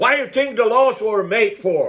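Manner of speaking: put-on angry old man voice.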